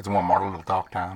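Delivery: put-on Southern US accent. Opening the talk time in a southern accent. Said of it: "get rid of your, your Southern accent".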